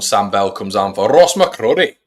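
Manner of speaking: put-on Scottish accent, announcer-style delivery. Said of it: "What we all rating my, um, Scottish accent?".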